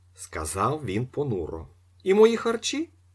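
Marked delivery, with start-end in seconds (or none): 2.0-2.9 sneering, mocking, very high-pitched delivery. One man bargains with another over his share, asking a mocking question. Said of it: "Глузливо спитав Остап".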